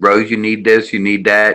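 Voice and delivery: normal talking voice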